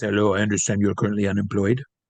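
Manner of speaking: put-on deep-voiced French accent. Quoting a man who kept trying to hire the speaker, in a deep-voiced French accent. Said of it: "he's French, very deep voice".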